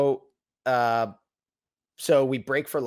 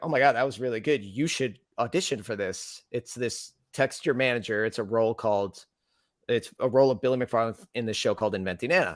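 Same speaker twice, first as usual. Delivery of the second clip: normal talking voice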